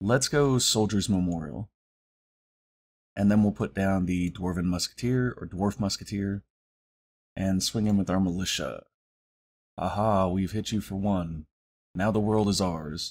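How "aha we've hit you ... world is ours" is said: dry, deadpan joking delivery. Joking after a small hit in a card game: deadpan joke. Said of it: "my humor might be a little bit deadpan".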